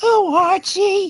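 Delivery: woman's voice, pitch way up, called out loud. Offering the group a woman's voice: Edith Bunker voice. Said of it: "I could maybe work out some Edith Bunker".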